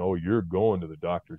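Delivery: ordinary talk, nothing marked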